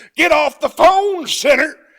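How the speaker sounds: fiery preacher bellow, very high and very loud. A comedian showing how an ordinary line becomes a joke, preacher character voice. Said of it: "Say it as your preacher character".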